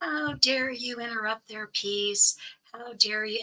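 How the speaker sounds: put-on scolding yell, pitched high, harsh and angry. Retelling how a rude cop yelled at the speaker: imitating a cop yelling. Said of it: "he started yelling at me".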